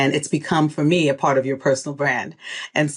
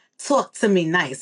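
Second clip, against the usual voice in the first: put-on Brooklyn accent; 3 semitones higher than usual. Turning to the guest's new book, says it in Brooklyn accent. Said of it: "I say it with my Brooklyn accent".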